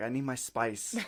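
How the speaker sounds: put-on Mexican accent. Retelling how he shooed them away at night: imitating a Mexican accent. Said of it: "Your accent".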